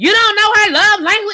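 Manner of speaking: loud, very high shouted outburst. Retelling a remark made to a long-married couple, retelling a yell. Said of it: "I'm sorry, I was yelling in the mic".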